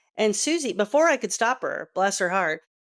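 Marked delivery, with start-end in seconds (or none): none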